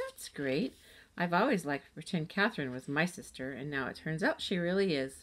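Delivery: plain reading voice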